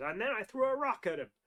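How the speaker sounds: fumbled words, voice pushed up high. Recalling a line from Batman: The Animated Series: Killer Croc impression. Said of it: "that's a really terrible impression".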